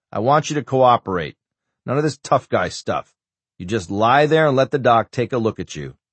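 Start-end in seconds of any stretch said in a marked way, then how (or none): none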